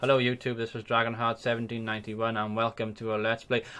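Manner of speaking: flat, level, negative monotone, acted. Speaker imitates his old Let's Play commentary: flat monotone. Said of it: "It's very monotone".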